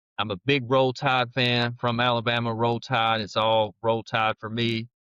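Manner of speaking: normal talking voice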